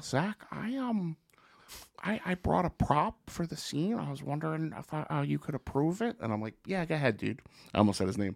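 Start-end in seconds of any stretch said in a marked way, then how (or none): 0.0-6.2 put-on tiny boy voice, higher, quieter. Retelling a man walking up with a bag: tiny little boy voice. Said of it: "he's got this tiny little boy voice".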